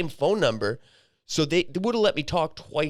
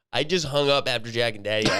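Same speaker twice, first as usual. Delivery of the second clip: usual speaking voice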